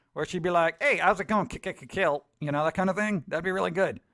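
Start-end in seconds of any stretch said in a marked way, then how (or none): 0.9-2.3 jittery, small-sounding robot voice. Suggesting how Josie could talk: Max Headroom-style voice. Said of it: "Josie should be like a Max Headroom type".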